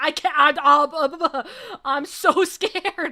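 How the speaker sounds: mock frightened, very loud outcry, drawn-out "I'm". Retelling a blood pressure check after being told to calm down, retelling being anxious. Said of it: "I was really anxious".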